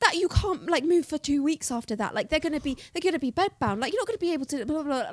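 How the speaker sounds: frantic, worried, freaked-out mother, fast, high, loud. The speaker retells their mum's reaction to the news, imitating mum freaking out. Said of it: "like freaking out".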